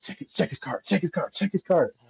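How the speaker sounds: hushed, held-down whisper. Retelling a shopper whispering to the door guard: imitating someone whispering. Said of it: "trying to whisper to the guy at the door".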